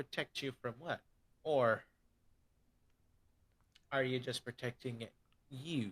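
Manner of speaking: sassy, needling, pointed delivery. Voicing a player's inner voice that questions them: sassy voice. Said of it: "I got the sass voice".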